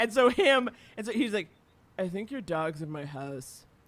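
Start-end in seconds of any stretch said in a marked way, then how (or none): 2.0-3.6 mock very low, flat, expressionless deadpan voice. Speaker retells what her next-door neighbor said when they first met, imitating a deadpan dude. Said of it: "deadpan dude".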